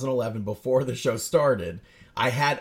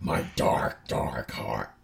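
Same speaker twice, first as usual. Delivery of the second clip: breathy, hellish, ghostly whisper; 12 semitones lower, 4 dB quieter than usual. Thanking listeners from a cold, dark heart: Kevin from The Office voice, gone to hell. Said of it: "Kinda sounded like Kevin from The Office if he went to hell".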